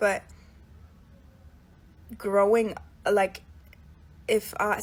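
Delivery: very loud, halting, stumbling stutter. Reflecting on mistakes made at nineteen, struggling to speak English, stuttering. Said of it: "I'm literally stuttering".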